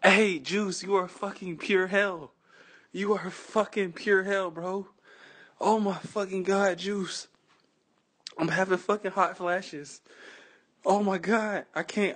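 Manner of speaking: soft, breathless, gasping between fits of laughter. Speaker reacts to another person's answer, laughing hard. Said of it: "I gotta catch my breath, I'm laughing so hard".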